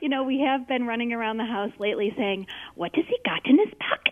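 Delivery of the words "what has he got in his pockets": fantasy creature voice. Asked to do a Gollum voice, the speaker repeats a line from home: Gollum voice. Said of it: "I also want to hear your Gollum voice".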